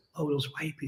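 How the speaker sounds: hushed whisper under the breath. Imitating people who lower their voice to say a phrase: imitating someone whispering. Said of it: "they gotta whisper".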